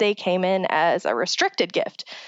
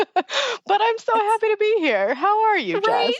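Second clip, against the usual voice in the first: very high, giggling through each drawn-out word; 12 semitones higher than usual. Greeting the co-host at the start of the episode, laughing while talking. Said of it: "you will hear it in my voice that I cannot stop laughing".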